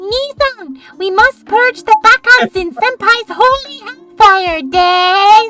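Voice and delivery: voice through a cup. Reading out a chat message in character, speaking into a cup. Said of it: "I'm gonna try to do it in this cup".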